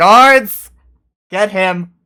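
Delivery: very loud, high, barked shouting. After a stunned silence, a man shouts an order to the guards. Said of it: "before you hear him shout".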